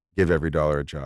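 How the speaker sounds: quick delivery. Asked for a money mantra in three words, speaker answers, said fast. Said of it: "I just had to say it fast".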